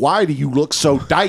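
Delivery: slow, drawn-out, deliberate movie-star voice. Acting out a John Q scene as Denzel Washington: Denzel Washington impression. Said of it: "Denzel's just going like".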